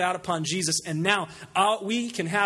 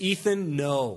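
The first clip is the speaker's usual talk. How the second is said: stern, firm delivery; 4 semitones lower than usual. Parent recalls warning a toddler away from danger, retelling a stern warning. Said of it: "we would tell him with a stern voice".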